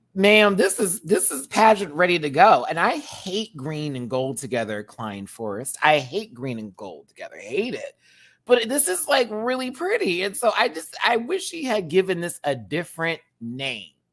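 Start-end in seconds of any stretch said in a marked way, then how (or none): 0.2-2.7 loud, high, excited, enthusiastic voice. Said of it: "I was like".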